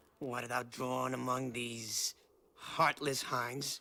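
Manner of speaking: weak, non-threatening menace. A film character confronts others with a sword: non-threatening voice trying to threaten. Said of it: "most non-threatening voice trying to be threatening".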